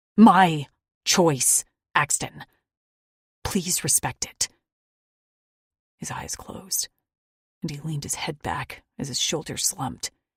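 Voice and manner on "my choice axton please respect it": loud, slow, gritty, determined voice. Reading a story aloud, the narrator insisting on her choice: gritty determined tone. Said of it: "I found a grit in my tone".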